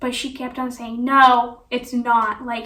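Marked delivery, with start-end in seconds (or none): 1.0-2.4 rude, loud delivery. Retelling a doctor who kept denying the cause: imitating a rude voice. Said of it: "in a rude, rude voice".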